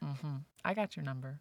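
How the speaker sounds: plain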